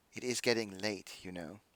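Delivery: soft, very hushed motherly tone. Voicing the mother telling the children it is getting late: quiet motherly voice. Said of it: "kind of quietly, but loud enough for the room to hear".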